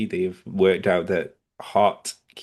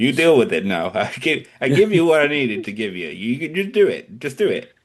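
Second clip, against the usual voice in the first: pitched-up mafioso tough-guy voice; 5 semitones higher, 4 dB louder than usual. Talking with a listener and acting out someone's attitude, in a mafioso voice. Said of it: "You sound like to be like a like a mafioso".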